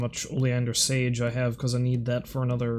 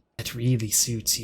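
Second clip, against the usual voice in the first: mock creepy delivery. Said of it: "that was vaguely creepy".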